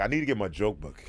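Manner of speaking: plain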